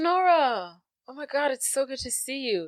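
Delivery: put-on excited voice. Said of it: "He's like".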